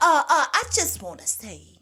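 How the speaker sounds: voice pushed up high, stammering and halting. Describing how David Blanner plays his role, show how he talks in a high-pitched Missouri Slim voice. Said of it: "he talks like that with the high pitch".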